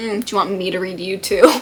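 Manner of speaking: put-on sassy voice. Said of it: "being sassy to them".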